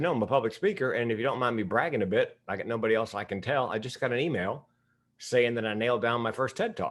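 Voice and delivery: ordinary talk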